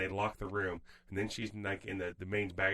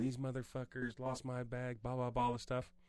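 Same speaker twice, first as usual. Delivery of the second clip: put-on mild, irate, angry ranting tone; 4 semitones higher, 3 dB quieter than usual. Retelling a lady outside the airport on her phone: imitating a woman yelling. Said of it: "yelling at somebody on her phone".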